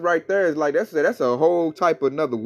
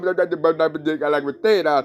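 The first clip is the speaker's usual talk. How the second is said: put-on, mock stuttering. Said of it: "his old stuttering".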